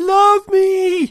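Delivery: desperate, frantic, very high begging wail. Reading a story, a creature on the floor gives a frantic cry. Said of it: "The cry was frantic".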